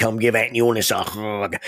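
gravelly, raspy voice. Retelling a large aunt grabbing your cheeks at a family reunion, in Aunt Eunice's gravelly voice. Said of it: "she has this gravelly voice".

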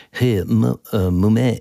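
bad, fake French accent. Imagining saying hey to mom, in a bad french accent. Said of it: "throw in the French accent. Hey, I can't do a French accent, but".

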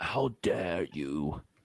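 slow, soft, drawn-out "how dare you". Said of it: "she exclaimed".

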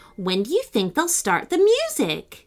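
ordinary delivery

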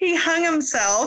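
words broken up by laughter throughout. Telling a story about your brother and insisting that you're crying, you are laughing while speaking. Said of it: "Sorry, I'm not laughing, I'm crying".

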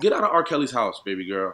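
high, loud yelling. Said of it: "how you're saying it".

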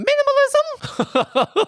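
exaggerated, very high, swooping jackass voice. Showing how the word must be said to avoid stuttering: said loudly like a jackass. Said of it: "I have to say it like a jackass".

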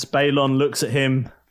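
ordinary delivery

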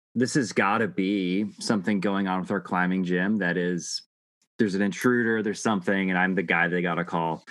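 normal talking voice

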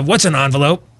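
put-on cartoon character voice. Speaker describes what younger generations are debating, in a Beavis and Butthead voice. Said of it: "if I could use my Beavis and Butthead voice".

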